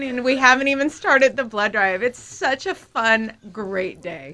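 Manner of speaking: talking through nonstop laughter. A studio guest answering the host's greeting, laughing while talking. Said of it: "I can't stop laughing".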